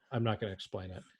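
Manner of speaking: ordinary talk, nothing marked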